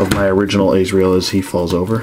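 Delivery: normal talking voice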